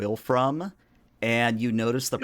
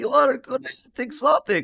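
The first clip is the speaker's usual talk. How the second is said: very high, shrill put-on old woman voice; 14 semitones higher, 5 dB louder than usual. Telling a story about browsing an aisle, the babushka's line in old woman voice. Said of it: "I'm actually going to attempt to do a voice".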